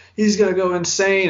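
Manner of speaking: high, loud, freaked-out hyped excitement. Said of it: "people freaking out like".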